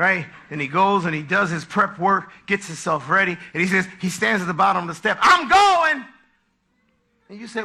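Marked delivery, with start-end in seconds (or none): 5.2-6.0 loud, high, sour, grumpy voice. Acting out a husband leaving the house: imitating a grumpy husband. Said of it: "He just gets up with a bad attitude".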